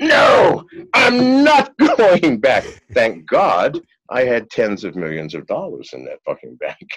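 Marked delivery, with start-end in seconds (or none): 0.0-2.6 very loud, high, drawn-out shrieking scream. Retelling grabbing a bank table, the speaker reenacts his own past outburst: retelling a scream. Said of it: "start screaming".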